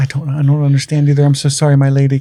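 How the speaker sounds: put-on weepy, sobbing, tearful delivery. Retelling a scene where Alinda apologizes to her friend: imitating Alinda crying. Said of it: "and Alinda crying, like".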